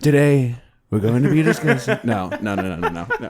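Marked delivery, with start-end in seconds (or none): 0.0-2.0 put-on whispery ASMR voice, louder. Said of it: "I'm gonna do the, the summary in that voice".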